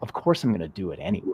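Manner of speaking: easygoing, relaxed, light playful energy. Showing again how to say the inner line: relaxed, playful energy. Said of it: "almost like a playful energy".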